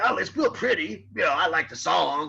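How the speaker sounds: gruff, rough-edged voice, pitched slightly up. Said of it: "He had quite a kind of a gruff sort of voice".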